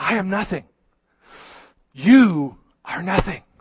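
imitated whispering. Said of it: "he whispered something at them".

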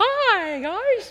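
tiny, very high squeaky cartoon-mouse voice. Comparing herself to a big deep-voiced man, the speaker shows her high squeaky voice. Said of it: "I feel like Minnie Mouse or Mickey Mouse".

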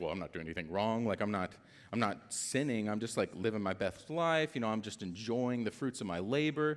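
ordinary talk, nothing marked

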